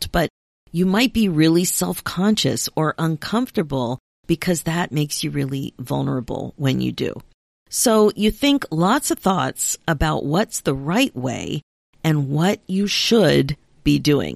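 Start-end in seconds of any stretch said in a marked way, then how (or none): 12.9-13.6 leaning stress on 'should'. Speaking directly to the listener, stress on 'should'. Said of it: "Emphasis on should".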